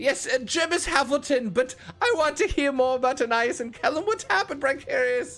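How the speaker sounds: squeaky character voice. Voicing the shortest halfling asking what happened: squeaky character voice. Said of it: "the squeaky one".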